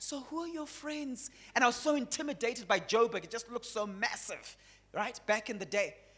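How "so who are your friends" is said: nice, soft-spoken, hushed voice. Retelling asking a distant relative who his friends are, imitating his own nice soft voice. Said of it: "in my nice, like, soft voice".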